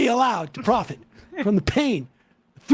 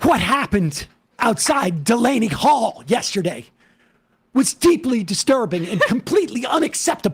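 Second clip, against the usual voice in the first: put-on senator voice, read-aloud delivery. Reading a senator's tweet from last night aloud: Cory Booker voice. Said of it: "I'll read it in the voice of Senator. Cory Booker".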